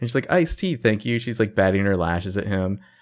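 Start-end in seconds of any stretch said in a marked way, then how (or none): 0.3-1.2 put-on sweet, polite voice. Retelling a character ordering from the waiter: sweet Arya voice. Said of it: "very nice, sweet Arya smile".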